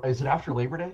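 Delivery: theatrical stage whisper, said aside. The player's character leans in and asks V a question: stage whisper. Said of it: "But I'll stage whisper to V".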